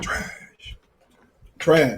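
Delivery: breathy, hushed, low, whispery put-on voice. Judging a possible fight result in a Richard Sherman voice. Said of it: "in my Richard Sherman voice".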